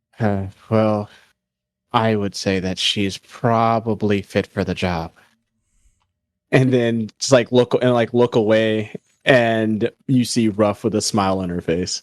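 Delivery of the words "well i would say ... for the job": slightly lower, deeper tone. A game narrator voices Balmore answering about Ruff: lower-toned voice. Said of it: "slightly hear a um lower toned".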